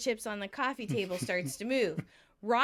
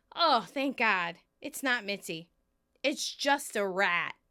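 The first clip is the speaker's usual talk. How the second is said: ordinary talk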